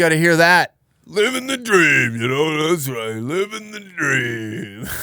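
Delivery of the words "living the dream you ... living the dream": put-on drunk voice. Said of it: "Bunch of drunks trying to figure out their problems".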